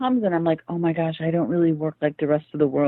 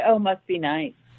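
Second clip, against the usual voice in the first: pointed tone with an edge; 5 semitones higher than usual. A speaker quotes what their friends say to them, mimicking friends' edgy tone. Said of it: "with that edge in their voice".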